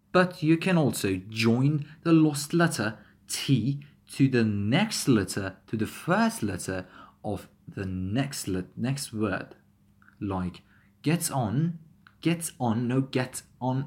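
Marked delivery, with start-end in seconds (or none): 13.0-13.8 robotic voice with separated words. Showing a wrong way to say the phrase: robotic, separated words. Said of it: "it sounds like a robot".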